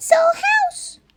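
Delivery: tiny, squeaky mouse voice, very high pitch. Narrator reading a story, voicing the mother mouse, squeaky mouse voice. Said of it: "squeaked the mother mouse".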